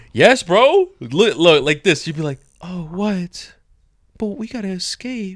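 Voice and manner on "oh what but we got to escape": soft, innocent-sounding seductive voice, high, slow, drawn out. Complaining about a movie character to another speaker, imitating Betty's seductive voice. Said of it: "she talks like that seductive type of voice".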